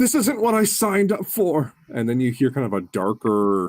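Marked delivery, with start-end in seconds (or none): 0.0-1.7 very high, frightened, scared cry. Voicing a figure just struck for twenty-three points of damage, scared. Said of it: "scared yelp".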